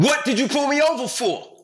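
put-on shrill scream at top pitch. Retelling being pulled over by police, yelling at the officer, retelling screaming at the officer. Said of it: "I started screaming at him".

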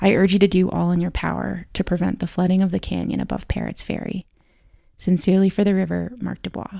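normal talking voice

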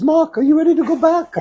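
very high-pitched voice. Retelling what the rabbi asked before you left, imitating Rav Aaron Bino's very high voice. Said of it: "He has a very high voice. He speaks like this".

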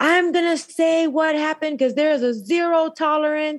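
acted, bold, very high, strong, confident tone. Retelling how strongly she meant to testify in court: imitating her own strong voice. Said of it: "my voice that was".

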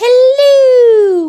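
very high, loud, shrill, drawn-out hello. Answering which film the hello greeting came from: Mrs. Doubtfire hello. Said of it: "Missus Doubtfire".

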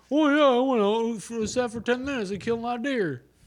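very high, dopey, dumb-guy bro voice, bragging. Describing how people tell them hunting stories, the speaker mimics them in a mocking dumb voice. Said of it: "they say it in a dumber voice".

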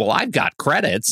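put-on, imitated Bronx accent. Retelling an alien character's line from a subtitled scene, imitating a Bronx accent. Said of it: "Like he's like from the Bronx".

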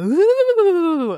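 very high, drawn-out, spooky, ominous ghost moan. Showing how an ominous ghost sounds: ominous ghost moan. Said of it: "an ominous ghost going".

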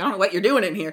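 rude, snippy tone. Retelling what a woman said when she returned the coat, imitating her snippy, rude tone. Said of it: "It was a little like, fuck you. Like, don't use that tone".

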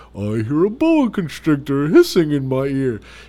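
wide, loud elephant voice.

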